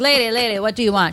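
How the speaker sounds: put-on spoken with a Jamaican accent. Retelling a story, the speaker quotes a man in line asking a lady: Jamaican accent impression. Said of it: "He sounds like Jamaican or something".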